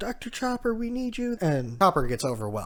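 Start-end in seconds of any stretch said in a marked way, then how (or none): 0.0-1.4 mock group shout, pitched way up. Retelling a scene where everybody yells for the doctor: imitating people yelling.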